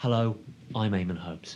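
put-on vintage, old-style broadcast announcer voice. Showing a co-host what the old BBC voice sounds like: old BBC voice. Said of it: "what was the B B C voice?".

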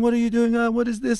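very high mock scream.

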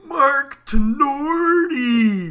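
very high, very loud scream, held long. Retelling how he cheered each NHL 94 goal, screaming the name as loud as possible. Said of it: "Just exactly like that. He'd scream it as loud as he could".

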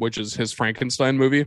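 ordinary delivery

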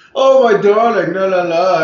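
put-on Connecticut accent, loud, rich, slow drawl. Two people riffing on how someone talks; one does the Connecticut WASP voice. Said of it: "that like Connecticut wasp voice".

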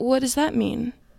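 mock earnest, wholly genuine-sounding tone. Retelling a talk about accountability, the speaker quotes Sammy in a most genuine voice. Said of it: "in the most genuine voice I've ever heard".

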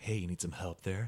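very low, deep, seductive voice. Imagining Clippy as a sexy costume offering help: seductive Clippy voice. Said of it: "Clippy being all seductive".

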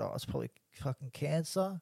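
cheeky, joking tone, acted out. Retelling an answer to the hairdresser's question: retelling a cheeky remark. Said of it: "in a cheeky way".

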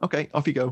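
casual, unbothered, nonchalant, offhand tone. Retelling a film scene, quoting the officer: imitating a nonchalant officer. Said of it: "the officer just nonchalantly goes".

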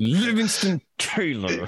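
said through clenched teeth. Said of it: "you have to say it with clenched teeth too".

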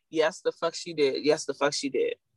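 ordinary delivery

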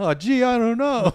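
very high, loud, nervous cartoon teenager squeak. Two speakers go through the announcements as Rick and Morty; Morty voice. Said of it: "I'm going to go through it as Morty".

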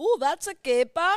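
put-on very high, loud, squealing Dutch accent. Quoting a movie catchphrase: Goldmember impression. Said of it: "I know that's Goldmember".

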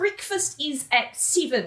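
attempted Australian accent. Host quoting a show character's line to listeners, bad Australian accent. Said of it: "She is trying to do an Australian accent".

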